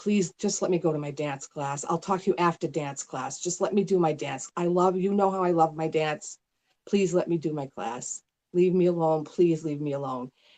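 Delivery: put-on pleading, begging tone. Retelling the words said while begging him: retelling own begging. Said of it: "So I begged him".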